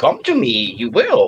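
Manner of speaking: own voice with inverted word order. Told the first try was nowhere close, speaker tries again with a Yoda impression. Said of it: "I'm trying to talk like him".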